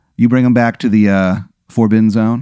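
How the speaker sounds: plain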